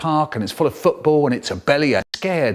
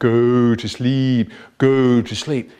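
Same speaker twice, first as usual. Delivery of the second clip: low, slow, spooky trance-like hypnotist voice; 4 semitones lower than usual. Retelling a boy hypnotising another boy with a conker, spooky voice. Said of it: "he starts up talking in this spooky voice".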